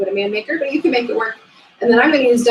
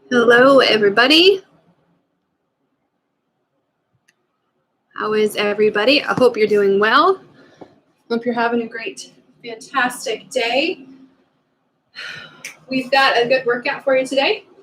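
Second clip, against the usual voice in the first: breathless, winded, out of breath; 2 semitones higher than usual. Greeting viewers right after finishing a class, before going over the workout, out of breath. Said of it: "Sorry if I'm out of breath".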